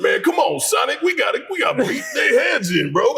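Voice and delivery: Southern drawl, pitched way up high. Retelling a rant voice for an animated video, in a Southern-accent Knuckles voice. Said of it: "he's from the South".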